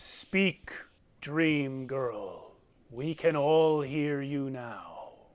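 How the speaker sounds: stone giant character voice. Voicing a stone giant who turns to the party: stone giant voice. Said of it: "And he says".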